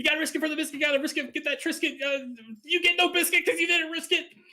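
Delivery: very high rapid-fire patter. Retelling yelling at a cautious player during a game, talking really fast. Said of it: "kind of just talking really fast".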